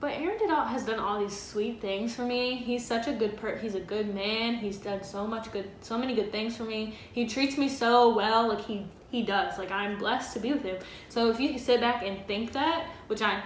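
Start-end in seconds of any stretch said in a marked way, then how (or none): none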